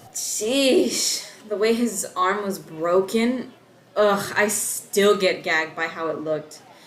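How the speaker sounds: pained, wincing through every word. Recalling Dave crashing into the fence at his birthday party, wincing.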